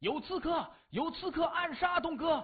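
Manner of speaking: sudden, shrill, very high alarmed shout. An unknown person raises the alarm over an attack on Dong-ge; sudden loud shout. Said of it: "突然大喊".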